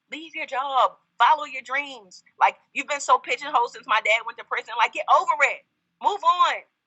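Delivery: fired-up, rousing, energized delivery.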